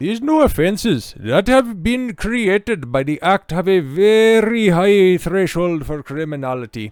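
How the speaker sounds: put-on Scottish accent, stretched out. Quoting a man's statement on new offences: put-on Scottish accent. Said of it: "Let me get into his uh, Scottish accent".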